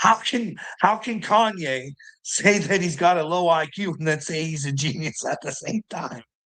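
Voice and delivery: mock complaining voice, put-on. Quoting a guy who was complaining, mock complaining. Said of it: "the guy was bitching".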